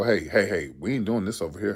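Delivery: deep, bass-heavy voice. Letting little boys know what won't be done here: deep bass voice. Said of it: "you got to put that bass in your voice".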